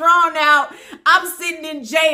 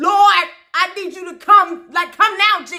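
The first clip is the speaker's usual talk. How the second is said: ordinary talk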